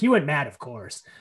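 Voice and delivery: put-on nonchalant, casual voice. Retelling a line from Clea: imitating Clea, nonchalant. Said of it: "she says it so nonchalantly".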